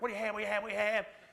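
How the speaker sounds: mock screamed, insistent, high and loud. Retelling how restaurant workers called out to customers: imitating people screaming. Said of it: "these people are screaming".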